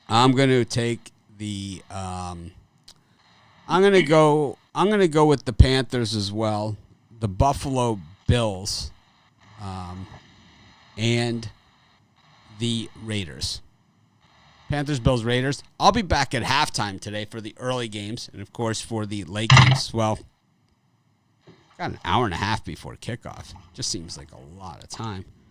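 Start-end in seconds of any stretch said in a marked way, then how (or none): 0.1-13.6 slow, relaxed reading. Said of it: "Gotta say it slow and easy".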